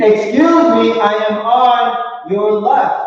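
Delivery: very slow, high, stretched-out, drawn-out shout. Acting out a cyclist warning a rider who cannot hear: acting out screaming a warning. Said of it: "I'm screaming".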